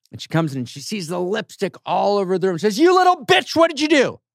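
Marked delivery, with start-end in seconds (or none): 2.8-4.1 very high, irate, scolding outburst. Retelling a mother finding lipstick drawn on the walls: imitating an irate mother. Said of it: "She's already a little bit irate".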